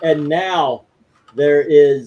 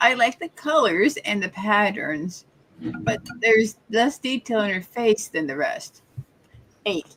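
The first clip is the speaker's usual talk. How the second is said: pitched-up teen superhero cartoon character voice; 6 semitones higher, 6 dB quieter than usual. Reading a viewer's message and rating aloud: Raven from Teen Titans voice. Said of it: "that's the Raven impersonation from the Go, uh, the, the Teen Titans".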